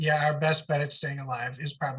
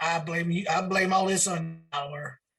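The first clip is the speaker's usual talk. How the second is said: put-on older-sounding Alabama local accent; 4 semitones higher than usual. Retelling a man who walked up to the speaker, in an alabama accent. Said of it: "he's has a Alabama accent".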